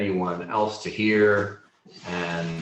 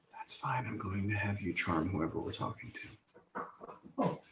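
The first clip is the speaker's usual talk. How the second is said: hushed, very quiet whispered aside; 2 semitones higher, 12 dB quieter than usual. Game master voicing a character who whispers to a player: whispering. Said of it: "she whispers in Orin".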